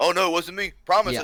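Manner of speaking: mock, overdone, high-pitched defensive protest. Retelling how a woman denied it was her: mock-defensive denial. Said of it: "she was so defensive, being like".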